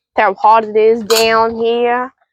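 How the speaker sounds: attempted Texan accent. Remarking on the heat while doing chores: attempted texas accent. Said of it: "your attempt at an accent there".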